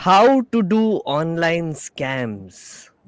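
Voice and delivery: very sinister, very slow, drawn-out menace. Host opens an Explain Like I'm Ten episode on online scams, very sinister voice. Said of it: "I'm saying this in a very sinister voice right now".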